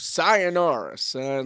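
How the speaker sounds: Texan accent doing a slow, drawn-out Spanish accent.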